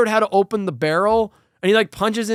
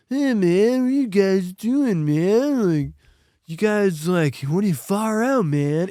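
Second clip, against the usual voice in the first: mocking, spaced-out stoner voice. Retelling what the two stoner guys in the scene say: imitating a stoner. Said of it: "two stoner guys who have zero reaction".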